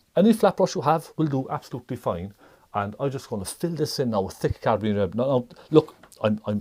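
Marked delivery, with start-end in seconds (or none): 5.1-6.6 stammering and stuttering, repeating the opening words. Giving a painting tutorial, the host catches themself stuttering. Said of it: "I'm stuttering".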